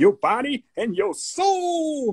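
high, hyped radio DJ voice. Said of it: "he had this high voice".

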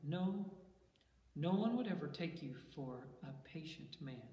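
ordinary delivery, nothing marked

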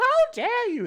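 very high, shrill, loud parroting. Mimicking how another speaker just sounded: mocking imitation of another player. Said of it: "That's you, what you sound like".

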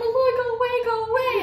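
high-pitched yell. Retelling a messy mishap while her roommate was asleep, retelling yelling at the dog. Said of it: "I'm like yelling".

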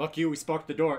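full-throated, very loud yell. Reacting to scratching heard at the door while resting: yelling. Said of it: "Are you yelling that at them?".

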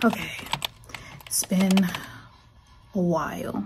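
breathless, winded, still catching air. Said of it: "I'm so out of breath".

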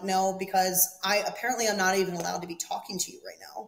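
ordinary delivery

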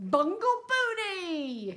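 shrill scream with every ounce of force. A man addressing the waiting world over the silence, screaming. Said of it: "he screamed".

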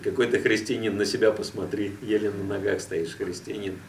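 ordinary talk

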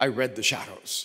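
put-on low, dark, foreboding, ominous delivery. Retelling what a stand-up comic said before a podcast, mock-ominous retelling. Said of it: "really ominous".

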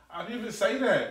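deep, bass-heavy voice. Told to speak to a woman correctly, the man objects, loud. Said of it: "You still loud".

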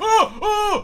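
high, loud, panicked shrieking screams.

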